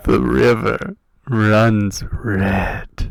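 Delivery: very loud, very slow booming narrator voice, every word dragged. Doing a bonus-round narrator quote: Wayne June impression. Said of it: "Wayne June impersonators".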